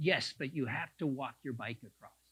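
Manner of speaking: mock, sharp, severe scolding tone. Repeating a passer-by's words about the bridge: imitating a sharp scolding tone. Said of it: "She said it like she was scolding me".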